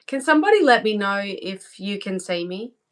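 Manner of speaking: usual speaking voice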